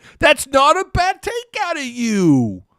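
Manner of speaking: very high, loud, swooping voice, "you" drawn out. Agreeing with a caller's take: Josh Bernaccini impression. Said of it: "I'm gonna do my best Josh Bernaccini impression".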